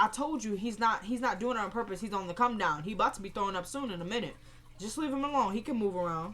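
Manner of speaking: plain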